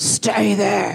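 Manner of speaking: very deep, low voice, dropped really low. Retelling a burglar's order, the speaker imitates his Darth Vader-like low voice. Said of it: "he had a really low voice".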